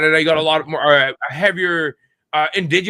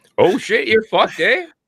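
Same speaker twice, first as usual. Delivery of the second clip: high, comic put-on Canadian accent; 5 semitones higher than usual.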